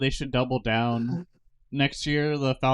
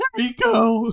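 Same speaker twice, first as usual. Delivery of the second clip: put-on loud, very high, squeaky teen voice; 9 semitones higher, 5 dB louder than usual. Delivering a hundred pepperoni pizzas as a prank, squeaky teen voice from The Simpsons. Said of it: "I'm gonna do the squeaky teen voice from The Simpsons".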